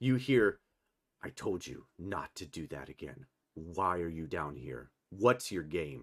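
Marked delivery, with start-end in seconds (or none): 1.2-6.0 low, deep, dark tone of voice. Running a game scene, a voice confronts the players, in a dark deep voice. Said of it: "in a dark, deep voice".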